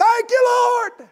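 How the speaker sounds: loud, very high shout. The speaker retells the man's thanks to the Lord: retelling a loud thanks. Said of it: "he said with a loud voice".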